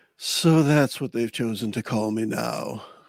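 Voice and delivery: fed-up, exasperated voice. Voicing a necromancer speaking telepathically to a visitor: exasperated telepathic voice. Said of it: "you do hear exasperation in his telepathic voice".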